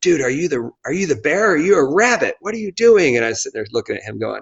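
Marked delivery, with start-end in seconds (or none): 0.0-3.1 play-acted high yelling, pitch climbing as it goes. Retelling being yelled at while cramped in a race: imitating Joe DeSena yelling. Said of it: "yelling at me".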